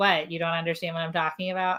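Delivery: ordinary talk, nothing marked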